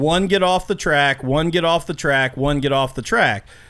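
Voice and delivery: ordinary talk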